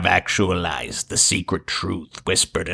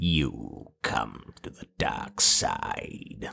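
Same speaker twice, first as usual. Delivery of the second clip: slow, stretched, whispered put-on voice; 9 semitones lower, 11 dB quieter than usual. Asked whether they have a Palpatine voice, giving it a shot: Palpatine voice. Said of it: "Like that? Is that Palpatine?".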